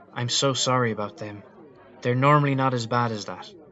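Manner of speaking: usual speaking voice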